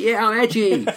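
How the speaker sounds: mock, high, smug edgy teen voice.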